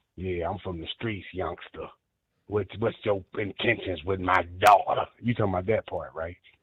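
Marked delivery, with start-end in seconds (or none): 0.2-5.1 mock-menacing, intimidating, much lower voice. Showing how not to greet a daughter's boyfriend, as a mock-menacing father. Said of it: "hit him with that menacing".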